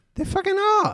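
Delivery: very high, jumped-up outburst, voice shooting up. Talking with friends about woke people who cancel others, voice going high. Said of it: "Why'd your voice go so high?".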